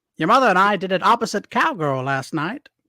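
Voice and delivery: put-on transatlantic accent. Talking dirty in a comedy bit, in a transatlantic accent. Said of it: "talking dirty with a transatlantic accent".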